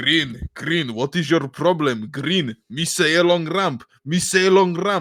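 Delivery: put-on Albanian accent. Quoting a guy from CS:GO videos to the group, imitating an Albanian accent. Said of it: "Albanian or something".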